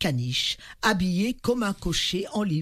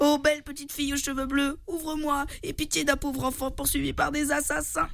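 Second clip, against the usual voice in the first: high, raised voice crying out; 8 semitones higher than usual. A narrator reads a hunted child's plea to a girl at a window, crying out. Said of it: "cria Pinocchio".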